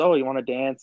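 ordinary talk, nothing marked

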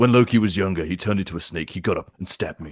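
Australian-accented voice. Urged to give your best at a Thor audition, do a Thor impression. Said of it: "Now you got to do your best Thor impression".

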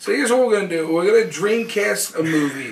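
put-on Italian accent throughout. Talking about the Sega Dreamcast, the speaker slips into a put-on Italian accent. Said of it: "I am stuck in my accent because you pissed me off".

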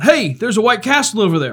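sudden high shouting. Retelling how a cousin spotted a restaurant from the car: imitating cousin shouting. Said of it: "one of my cousins shouted out".

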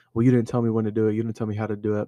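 plain

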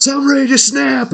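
mock, very high, all-out shrieked scream. Retelling a first pay-per-view promo: imitating Scott Steiner screaming. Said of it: "he just screams out".

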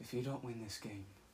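soft, hushed nature documentary narrator voice. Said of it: "he'd be like".

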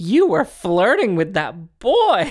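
high, loud, swooping, swinging mom voice. Correcting an impression of a mother's words: imitating mom's voice. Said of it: "My mother sounds like".

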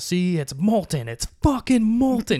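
mock shrill, high, climbing screamed rant. Retelling a man's rant in a restaurant, imitating someone screaming. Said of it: "just screaming".

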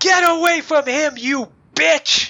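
very high, loud shrieking ghost cry. Voicing a ghost attacking the listener's character, screeching.

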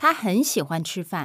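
natural, quick, smooth, full-speed reading in one breath.

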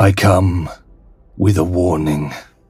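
voice of a vast presence, big and imposing. Narrating a scene and voicing the presence behind the big eye, big booming voice. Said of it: "the big booming voice".

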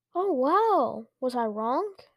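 ordinary delivery, nothing marked

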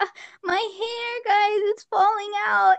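high-pitched fake weeping, with "hair" drawn out long. Retelling a TikTok where a girl cried over her hair, imitating someone crying. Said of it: "And she's like crying".

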